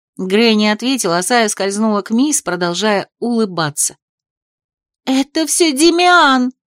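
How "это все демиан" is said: high, loud, blurted yelled outcry. A woman cries out as a smiling figure slips toward her; yelling. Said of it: "завопила Шарлотта".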